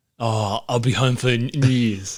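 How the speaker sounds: put-on Scottish accent. Retelling the start of a movie, in a pretend Scottish accent. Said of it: "Pretend that's a Scottish accent".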